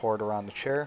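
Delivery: ordinary delivery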